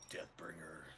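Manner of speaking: low deathcore metal vocal growl. Voicing a character saying her blade's trigger word: low deathcore metal growl. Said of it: "that low, like, uh, like, uh, deathcore metal vocals".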